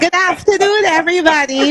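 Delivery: put-on Trinidadian accent. Retelling greeting people in a New York elevator: strong Trinidadian accent. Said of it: "with my strong Trini accent".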